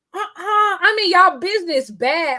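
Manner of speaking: put-on hollering, high, drawn-out yell. Retelling own reaction to a TV show late at night: imitating own screaming at TV. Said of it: "I start screaming at the T V".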